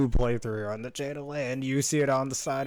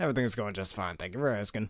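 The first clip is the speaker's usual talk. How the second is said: plain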